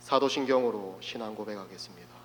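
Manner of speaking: put-on, affected solemn reverent tone. Recalling practicing leading a first church service at home: put-on solemn, holy voice. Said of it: "굉장히 거룩한 목소리로, 조금 거룩함이 느껴지지 않습니까?".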